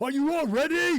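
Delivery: screamed, very loud and very high. Voicing a leader who turns to the fighters before the assault: screaming. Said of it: "he screams".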